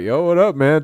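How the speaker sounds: tough, swaggering gangster voice. Retelling a friend back from a program: imitating gangster talk. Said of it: "Talking all gangster and shit".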